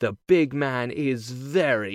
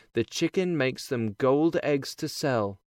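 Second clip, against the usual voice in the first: ordinary delivery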